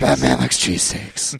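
low, whispered deep voice. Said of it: "so he's Batman now?".

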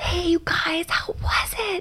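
slow, drawn-out, easygoing hushed whisper. Retelling how he greeted them on arriving home: imitating someone whispering.

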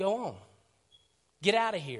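skeptical, doubtful, scoffing dismissive tone. Acting out how others brushed a man off: retelling a skeptical scoff. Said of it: "can you hear the skepticism in their voice".

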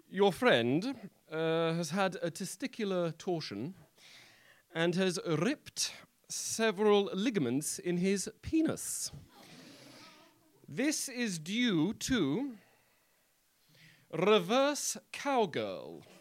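repressed posh British voice. Quoting the doctor who spoke to them about their friend, uptight British doctor voice. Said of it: "repressed British doctor with a chart".

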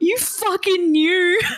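play-acted, very high, tearful crying voice. Recalling friends checking if they'd finished reading, retelling a crying accusation. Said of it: "Like I was crying".

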